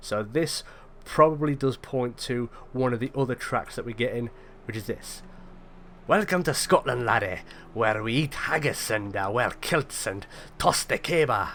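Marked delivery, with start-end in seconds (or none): 6.1-11.5 really bad, clumsy, put-on Scottish accent. Voicing an unfamiliar track that comes in: really bad scottish accent. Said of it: "that's a really bad Scottish accent".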